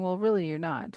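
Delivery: plain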